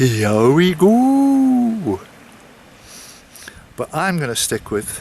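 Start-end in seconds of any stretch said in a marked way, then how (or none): 0.0-2.0 high put-on Welsh accent, go drawn out. Introducing things for Nicola as absent Ralph would say it, imitating Ralph's Welsh accent. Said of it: "he would say in his Welsh accent".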